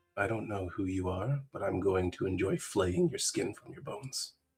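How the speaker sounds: very smooth voice. Voicing an unknown speaker threatening through a stone: very silky voice. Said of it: "a very silky voice says".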